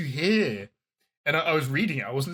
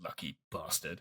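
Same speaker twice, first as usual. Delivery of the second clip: hushed, very quiet whisper to oneself; 9 semitones lower, 14 dB quieter than usual. Retelling a scene where one character mutters as another walks out: imitating a whisper. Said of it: "just kinda whispers to himself".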